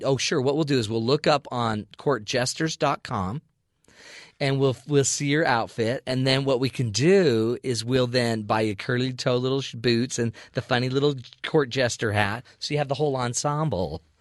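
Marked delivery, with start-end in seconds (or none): none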